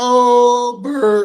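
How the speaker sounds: cracking voice on long oh. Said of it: "Voice cracking like I'm going through puberty".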